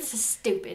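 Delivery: put-on British accent. Speaker voices his sister's reaction to the episode: British accent. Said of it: "why you gave her a British accent".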